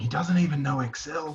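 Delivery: soft, whispered delivery. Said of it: "lots of whispers going".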